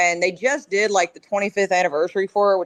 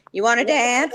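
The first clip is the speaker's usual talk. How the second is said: mock cartoonish old woman voice; 4 semitones higher than usual. Telling another speaker how they sounded, imitating South Park's old stripper lady. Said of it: "old lady walking around going".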